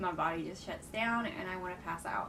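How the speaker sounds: ordinary delivery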